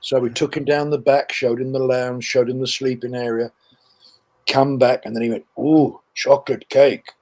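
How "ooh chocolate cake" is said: put-on broken-English exclamation with non-native accent. Retelling the german soldier spotting the cake: imitating broken english. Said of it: "comes on in broken English saying".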